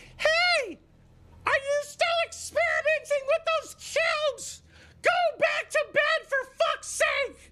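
very high-pitched put-on woman's voice. Acting out what his wife told him, in a put-on woman's voice. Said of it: "I guess I gotta do the woman's voice".

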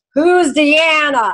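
put-on New York accent. Quoting a character from a show he watches, in [name]'s bad New York accent. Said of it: "we have bad accents".

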